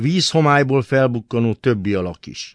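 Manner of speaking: ordinary delivery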